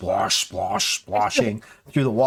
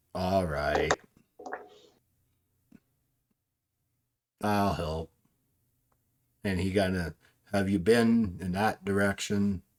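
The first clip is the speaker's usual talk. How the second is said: put-on flat monotone voice, quieter; 3 semitones lower, 6 dB quieter than usual. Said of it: "Eeyore's not really an accent, it's just monotone".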